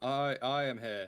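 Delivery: very slow, drawn-out, loud, booming, grand heroic voice. Doing the impression after the other speaker mentions it: All Might impression. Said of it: "your All Might impression".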